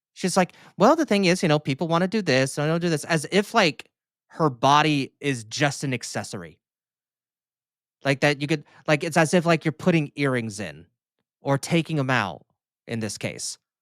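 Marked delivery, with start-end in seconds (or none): 0.8-3.1 put-on offhand, matter-of-fact breezy tone, pitched up. Mocking how she talks about body options: imitating someone talking casually. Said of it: "That she's talking so casually about it".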